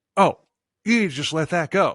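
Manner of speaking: ordinary talk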